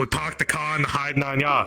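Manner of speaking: put-on Boston accent, done for show. Trying out a put-on accent while playing with another speaker: Boston accent. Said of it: "it's Boston".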